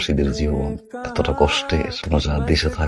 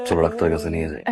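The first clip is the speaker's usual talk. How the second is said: plain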